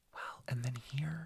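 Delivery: soft, hushed whispering voice. Starting to add a detail while discussing a case: whispering. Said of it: "Why are you whispering?".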